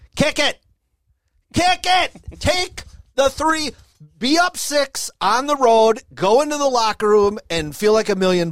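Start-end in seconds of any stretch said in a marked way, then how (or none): 0.2-7.4 mock yell, kept mild and high-pitched. Recalling a football game's final seconds, retelling yelling at the tv. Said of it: "I'm just yelling at the TV".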